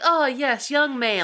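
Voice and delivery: play-acted eager, delighted, very high-pitched voice. Retelling a film scene, the press secretary answering a kid: imitating an excited reply. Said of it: "so excited".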